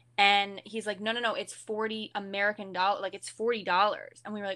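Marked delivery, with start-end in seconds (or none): none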